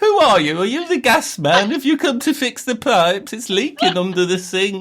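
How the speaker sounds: put-on silly, very high, eighty-year-old granny voice. Doing silly voices for a co-speaker, as an eighty-year-old granny voice. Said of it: "Why are you doing it like I'm an eighty-year-old granny?".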